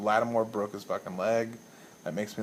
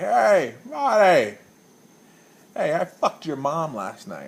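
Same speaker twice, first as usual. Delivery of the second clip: put-on very loud, belligerent, swooping drunken bellow; 6 semitones higher, 8 dB louder than usual. Retelling a belligerent drunk in a bar yelling at him; imitating a drunk yelling. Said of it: "he's yelling at me".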